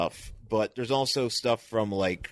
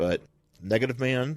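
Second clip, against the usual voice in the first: usual speaking voice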